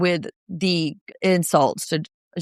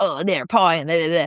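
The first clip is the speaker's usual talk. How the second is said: put-on gruff, grumbling voice. Retelling how a cast member sounds in his confessional: imitating a gruff complaint.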